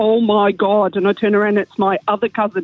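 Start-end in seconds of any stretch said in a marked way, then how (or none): 0.0-1.0 put-on thick Derry accent, spoken much slower. Retelling a cousin calling out in a bathroom, in a thick Derry accent. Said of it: "in a really thick Derry accent".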